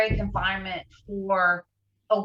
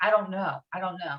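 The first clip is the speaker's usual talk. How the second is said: mock sobbed, crying, repeated words; 5 dB quieter than usual. Retelling own words to a police chief after a crash: retelling own crying words. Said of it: "And I was just crying, saying".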